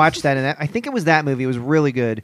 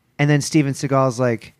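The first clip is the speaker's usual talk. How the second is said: normal talking voice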